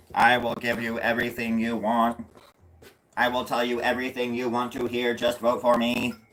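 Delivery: put-on flat, monotone robot voice. Acting out a robot candidate promising voters everything: speaking as a robot candidate. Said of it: "Then the robot on the right".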